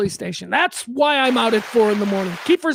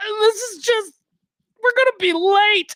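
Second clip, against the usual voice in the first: put-on, very high, over-dramatic crying voice; 10 semitones higher than usual. Retelling an actress's answer when asked why she's crying, imitating Danny crying. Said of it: "she started to cry legitimately".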